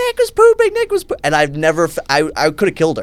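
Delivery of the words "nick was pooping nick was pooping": mock very high screaming. Recalling his sister running to the front door, imitating her screaming. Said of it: "I remember her screaming, like".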